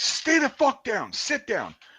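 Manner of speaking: mock very high, swooping, drawn-out drill-sergeant scream. Retelling a man ordering the speaker to stay down: retelling him screaming. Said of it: "I hear him screaming at me".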